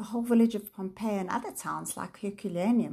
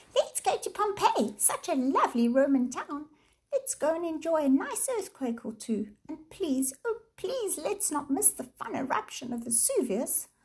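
furious, high, squeaky mocking voice; 7 semitones higher than usual. Once the mothers leave, Sam turns to Jane, furious, mocking, squeaky voice. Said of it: "said furiously in a mocking, squeaky voice".

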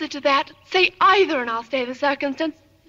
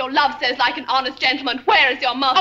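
usual speaking voice

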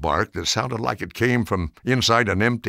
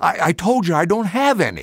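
gasped, breathless words; 8 semitones higher, 4 dB louder than usual. Narrator reads a cornered boy's reply to a demand for money, gasping. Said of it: "Jake gasped".

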